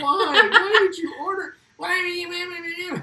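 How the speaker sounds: put-on duck voice, crying. Joking about a menu item, voicing Donald crying: crying Donald Duck voice. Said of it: "cuts to Donald crying".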